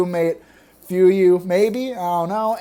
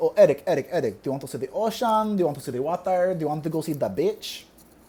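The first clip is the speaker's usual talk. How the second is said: imitated thick Filipino accent, quieter; 5 dB quieter than usual. Speaker imitating his mother asking him something as a child, thick filipino accent. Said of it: "she has a really thick accent".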